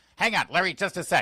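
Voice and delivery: put-on, very angry, high, impatient brush-off. Mark Levin on the phone puts Larry on hold before turning to his puppy, mock-angry Mark Levin impression. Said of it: "really angry".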